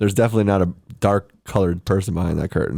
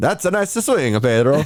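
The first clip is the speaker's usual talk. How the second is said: put-on odd, weird, pitched-up Italian accent; 8 semitones higher than usual. Imitating dad while golfing: imitating dad's weird Italian accent. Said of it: "Sounds like fucking Luigi".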